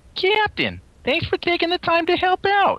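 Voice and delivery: very high, swooping female officer voice. Voicing the female officer character addressing the captain, in a female officer voice. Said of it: "That's my female officer".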